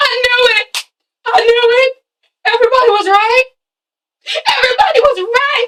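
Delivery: acted, tearful, very high sobbing wail. Retelling a mother's reaction as she starts crying: imitating someone crying out. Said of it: "she starts crying".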